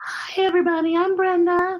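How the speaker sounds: high little bashful puppet voice. Introducing herself to everybody: Brenda the banana voice. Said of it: "This is this is Brenda the banana".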